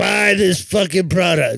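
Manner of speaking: put-on grumbling old man voice. Speaker voicing a complaining old man in a bit: grumbling old man voice.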